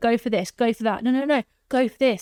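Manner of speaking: mock-enthusiastic eager tone. Retelling how a helper advised them on benefits, imitating her enthusiastic encouragement. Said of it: "she was so enthusiastic".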